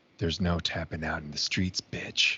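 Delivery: soft, hushed, close-up whisper. Telling what he would have said to the listener's brother as he tapped out, whispered in his ear. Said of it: "I would have whispered in his ear".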